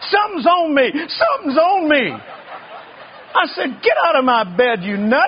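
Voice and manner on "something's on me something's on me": frantic, high, panicked hollering. Retelling how someone jumped into his bed at night, acting out the holler.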